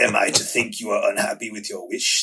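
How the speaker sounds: evil genie character voice. Discussing the Wishmaster with another speaker, the speaker does the line in Wishmaster voice. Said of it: "That's the actual Wishmaster voice".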